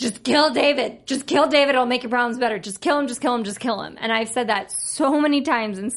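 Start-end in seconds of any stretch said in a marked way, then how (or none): 0.0-4.0 put-on fast shouting, over and over. Talking about watching a show, retelling shouting at the tv. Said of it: "I'm like shouting at my TV".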